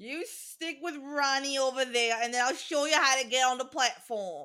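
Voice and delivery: put-on New Jersey accent. Quoting a character while watching a musical: Molly Weasley New Jersey accent. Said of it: "I wasn't aware that Molly Weasley was from New Jersey".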